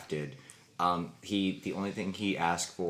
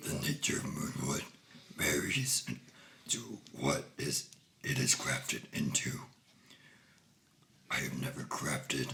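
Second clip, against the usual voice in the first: big, deep giant troll creature voice; 4 semitones lower, 3 dB quieter than usual. Answering another player's question in character, in a giant troll voice. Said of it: "giant troll? with this voice".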